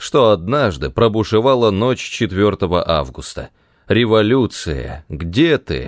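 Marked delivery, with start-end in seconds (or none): none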